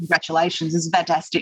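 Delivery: ordinary talk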